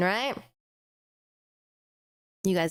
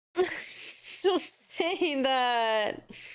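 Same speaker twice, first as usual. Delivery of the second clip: tearful, high, slow whimper. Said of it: "I'm gonna cry again".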